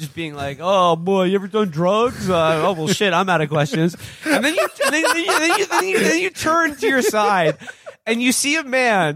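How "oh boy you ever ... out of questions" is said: put-on voice with mouth full of candy. Acting out an uncle questioning a victim: pretend talking with lollipops in mouth. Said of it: "he's got three lollipops in his mouth".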